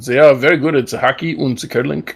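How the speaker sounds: fake German accent throughout. Talking about a Swedish car but keeping a put-on German accent. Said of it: "I'm still using the German accent".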